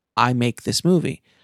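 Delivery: ordinary talk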